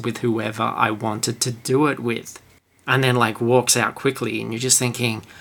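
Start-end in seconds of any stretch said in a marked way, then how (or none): 0.0-2.4 loaded, suggestive delivery. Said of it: "very loaded as well".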